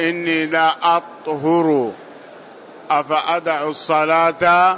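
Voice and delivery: ordinary talk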